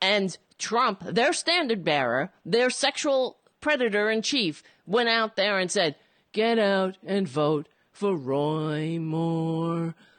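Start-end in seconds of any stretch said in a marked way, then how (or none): 6.3-9.9 low, slow, flat monotone, "Roy" drawn out. Ranting about a Senate candidate, quoting Trump's endorsement, flat monotone Trump quote. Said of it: "What is this monotone?".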